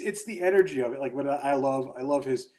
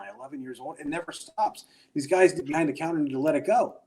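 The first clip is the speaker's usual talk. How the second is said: normal talking voice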